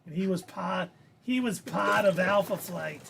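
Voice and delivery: rough, unpolished attempt at a Boston accent. Describing a comic's plot, the speaker slips into what a listener hears as a boston accent. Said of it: "Is that a Boston accent?".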